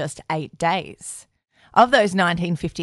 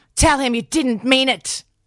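put-on drunken, high-pitched, shouted yell; 8 semitones higher, 4 dB louder than usual. A narrator reads Nora's line to her son Joe: drunken yelling. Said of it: "drunkenly lowered the bar on parenting even further by yelling at Joe".

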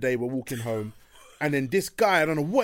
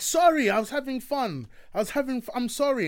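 mock very high, stumbling, over-apologetic voice; 9 semitones higher than usual. Retelling how a man at Carnival answered being stopped: imitating someone apologizing. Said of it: "he got really apologetic".

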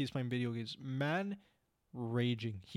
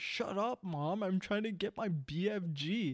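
rude, high, drawn-out yelled snap; 7 semitones higher than usual. Retelling a friend's reply to his mom: imitating someone shouting. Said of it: "he shouted at the top of his lungs".

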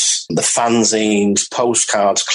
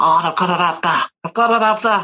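put-on, pitched-up Liverpool Scouse accent; 8 semitones higher than usual. Talking about a Setting Suns collection, speaker imitates Brian Curlew in a Scouse accent. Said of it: "that's my Scouse accent for you".

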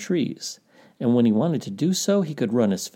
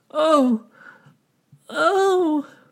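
pained, very high-pitched, drawn-out groan; 4 dB louder than usual. Gray One, with Bear's claws stuck in his back, groans. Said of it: "groaned Gray One".

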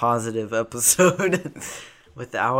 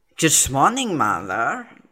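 fake, overdone put-on German accent; 4 semitones higher, 4 dB louder than usual. Saying a quiz line meant to sound Danish: put-on German accent. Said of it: "And went for a German accent".

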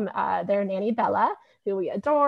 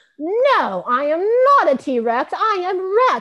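put-on very high, very drawn-out, stubborn indignant child voice; 9 semitones higher, 6 dB louder than usual. Retelling a child's reply when asked if he is a t-rex: imitating an angry child. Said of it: "And he gets so angry".

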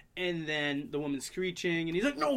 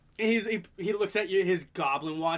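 plain

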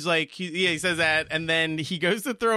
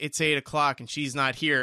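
ordinary talk, nothing marked

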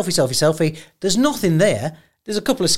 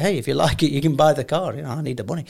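laughing, joking, half-serious tone; 2 semitones lower, 3 dB quieter than usual. Retelling offering strangers the car: retelling a laughing, half-serious offer. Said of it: "I said it, like, laughing, but, uh, half serious".

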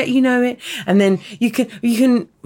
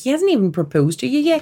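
put-on speaking in a Belfast accent. Retelling what a man said about not proposing yet: Belfast accent. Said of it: "Do it in the accent".

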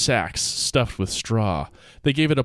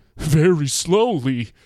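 crazy-sounding put-on voice; 4 semitones higher than usual. Pretending to be Harold, answering the other man's question: imitating Harold, crazy voice. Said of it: "would answer in a crazy voice".

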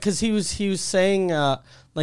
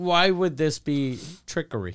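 ordinary talk, nothing marked

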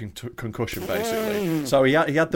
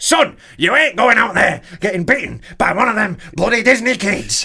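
loud, daft, raised voice laid on thick; 7 semitones higher, 8 dB louder than usual. Repeating the imagined warning to his son: daft Daddy Fury voice. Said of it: "With his daft voice".

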